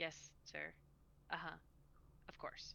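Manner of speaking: very quiet, breathy, barely audible whisper. A game master voices a character answering a voice box, whispering. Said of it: "he places his hand on it and he whispers".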